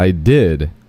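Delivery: heavy, loud, rising stress swelling into did. Retelling what they said back then, with loud rising stress on did. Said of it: "a rising inflection on "did," heavy emphasis, and getting much louder towards the word "did," and then falling off like".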